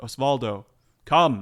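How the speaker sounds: very loud, booming, echoing, amplified call. Narrating a scene, voicing a woman calling Osvaldo across the room: loud echoing call. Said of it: "she thaumaturges the word".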